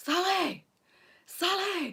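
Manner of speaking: very high, all-out top-of-the-voice shout. Speaker retelling a man shouting for her from the next aisle: retelling a shout at full voice. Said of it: "at the top of his voice".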